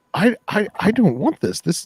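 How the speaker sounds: very high, loud, panicked squeal. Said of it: "she's like".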